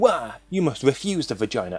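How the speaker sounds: mock hammy, half-hearted screaming outcry. Imitating people on the ideological right screaming: mock screaming. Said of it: "the ideological right who are screaming".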